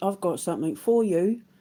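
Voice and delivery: put-on London accent. Retelling what a fruit-and-veg seller said to them, imitating a Londoner accent. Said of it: "in his Londoner accent".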